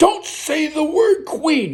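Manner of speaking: shrill, piercing, very loud, high-pitched outburst. Recounting a man snapping at the girl behind the desk, retelling a very loud outburst. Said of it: "He said that so loud that the piano stopped".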